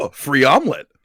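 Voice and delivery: ordinary talk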